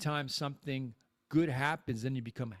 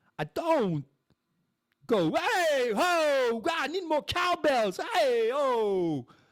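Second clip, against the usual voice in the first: very high, loud, drawn-out hollering; 13 semitones higher, 7 dB louder than usual. Showing how he does a Christopher Walken impression. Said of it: "when I do Christopher Walken".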